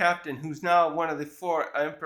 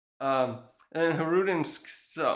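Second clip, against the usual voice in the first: ordinary talk, nothing marked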